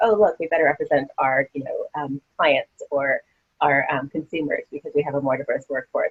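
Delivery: normal talking voice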